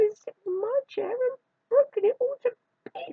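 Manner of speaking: very high, squeaky sobbing. Baby Bear finds his chair broken to bits: sobbing Baby Bear voice. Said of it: "sobbed Baby Bear in a squeaky little voice".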